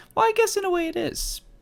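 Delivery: voice sitting very high in pitch. Musing about the point of this episode, in an unusually high voice. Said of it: "my voice was really high for that".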